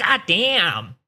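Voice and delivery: put-on thick, high Chinese accent. Retelling the man next to him at a movie in Taiwan, heavy Chinese accent. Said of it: "in a very heavy Chinese accent".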